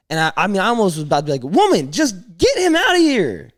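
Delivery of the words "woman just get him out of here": acted, swooping, drawn-out, very high-pitched holler. Retelling words almost said to a kid's mom at the movies: yelling a retold line. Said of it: "Sorry for yelling in your mic".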